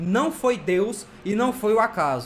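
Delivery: plain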